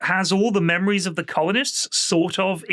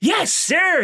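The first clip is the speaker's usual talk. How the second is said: very high, sugary, saccharine voice; 11 semitones higher than usual. Retelling how Wesley acts in front of the captain: imitating Wesley's eager reply. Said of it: "He goes".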